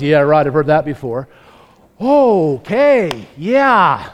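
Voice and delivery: slow, low, cynical sarcastic drawl. A speaker imagines God answering an apology, imitating God being sarcastic. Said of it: "Can you imagine if God got sarcastic?".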